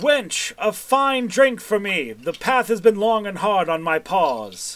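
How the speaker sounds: booming, grand cat voice, pitched high. Narrator voices an unseen prince ordering a drink, booming Prince Felwyn voice. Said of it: "you hear a booming voice".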